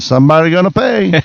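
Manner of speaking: imitated Chinese accent. Retelling a comedian's joke about a broken wall: put-on chinese accent. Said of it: "Do it with a Chinese accent".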